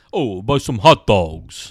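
loud, very slow 1970s Italian-American accent impression. Joking about an actor's usual movie voice, Bobby Cannavale impression. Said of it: "he just does like an impression of like an Italian person from the 70s".

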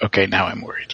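hushed, kept-down, quiet voice. Boz leans over to RC while Mary Sue is at the counter, quiet voice. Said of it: "says in a quiet voice".

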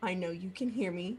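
whispering low. Leaning in toward a figure in the scene: low whisper. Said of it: "she wants to lean in and whisper really low".

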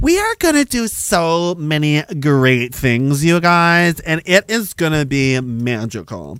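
slow, mock condescending politician voice. Mocking how politicians talk down to people: mock condescending politician voice. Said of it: "they talk to you like you're an idiot, like you're a child".

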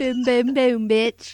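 very slow, drawn-out, put-on British accent. Joking about a night out as british women: british accent. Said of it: "put a British accent on that word".

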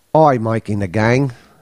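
bad put-on Australian accent drifting toward Cockney. Trying an australian accent they doubt they can still do: bad put-on australian accent. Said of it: "I don't even know if I can do an Australian accent anymore".

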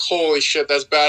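ordinary talk, nothing marked

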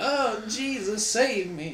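put-on elderly lady voice, pitched way up. Talking with friends about a woman who couldn't admit it, speaker quotes her in old woman voice. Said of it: "Is this your old woman voice?".

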